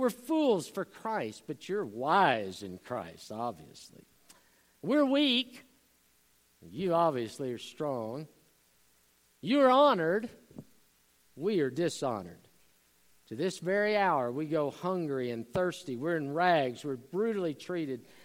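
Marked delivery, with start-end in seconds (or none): 0.0-8.3 put-on sarcastic tone. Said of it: "Paul is using sanctified sarcasm".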